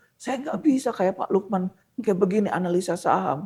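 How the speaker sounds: put-on elderly man's voice. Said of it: "dengan logat-logat udah tua gitu".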